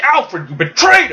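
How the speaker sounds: furious, very high-pitched, accusing outburst. Retelling a story where Alfred betrays the Robins, the speaker voices Damian: acting angry Damian. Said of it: "he's all pissed off".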